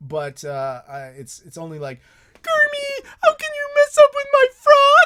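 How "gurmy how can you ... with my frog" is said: put-on voice pitched way up, loud. Showing the few lines they can manage, Miss Piggy voice. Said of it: "I can kind of do a Miss Piggy".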